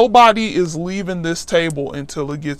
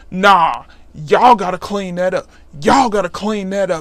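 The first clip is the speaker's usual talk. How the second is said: mock scolding, going off with attitude. Retelling the assistant principal going off at the speaker's table: mock attitude, going off. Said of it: "with an attitude and everything".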